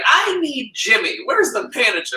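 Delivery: mock stern, serious, angry tone, pitched very high. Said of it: "She was just like".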